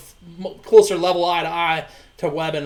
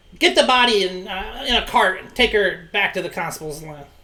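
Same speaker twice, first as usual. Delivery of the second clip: commanding, ordering tone; 3 semitones higher than usual. Voicing an NPC ordering guards to take the body: NPC yelling an order. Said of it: "And he yells at two pissy pants".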